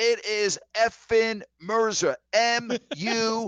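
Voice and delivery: very high, very slow, loud, drawn-out scream, spelled out. Retell how the producer yelled into the headset during your play-by-play, imitating a producer screaming. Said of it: "He's screaming as I'm doing the play-by-play".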